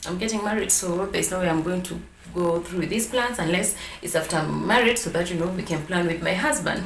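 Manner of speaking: normal talking voice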